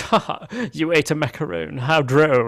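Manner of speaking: mock cartoony condescension, laughing through the words. Describing a character in a scene, imitating her condescending laugh. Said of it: "she's like laughing like".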